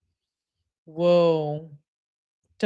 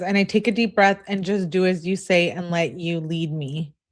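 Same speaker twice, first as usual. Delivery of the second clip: ordinary talk, nothing marked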